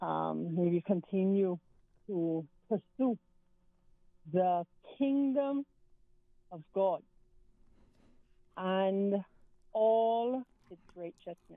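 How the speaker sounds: slow, halting, measured, word-by-word deliberate delivery. A caller greeted by a host, speaking slowly. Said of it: "So I said that slow".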